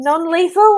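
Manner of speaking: shouting in a put-on voice. Stepping in to stop a hit in a game: shouting in character. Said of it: "I think I would shout".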